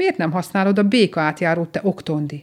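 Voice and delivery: ordinary delivery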